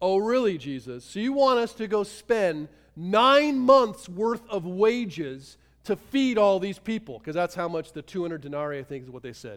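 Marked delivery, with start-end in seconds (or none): 0.0-7.2 put-on, loud, drawn-out, heavily sarcastic. Retelling the disciples' reply to jesus: imitating a sarcastic reply. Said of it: "it's very clear in their sarcasm".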